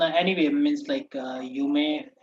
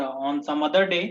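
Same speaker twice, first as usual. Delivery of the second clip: plain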